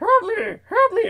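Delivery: very high, squeaky puppet voice. Retelling calling for help with a swollen throat, Muppet voice. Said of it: "I sounded like a Muppet puppet".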